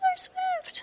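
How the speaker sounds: pitched way up and shrill. Showing the voice a dating phrase brings to mind: shrill Toad voice. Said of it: "like, a shrill, like, toad voice".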